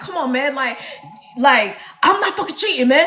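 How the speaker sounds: rapid-fire, rushed, rattled-off fast talk. Imitating Kamar denying cheating: imitating Kamar talking fast. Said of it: "Does he talk really fast?".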